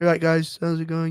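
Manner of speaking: flat, low-energy, unenergetic delivery. Contrasting a high-energy performer, the speaker demos a greeting in a low-energy voice. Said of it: "Which uses no fucking energy".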